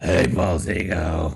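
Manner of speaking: mock gravelly old-man voice. Retelling a phone call, imitating a smoker's old-man voice. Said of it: "She sounded like an old man that had been smoking".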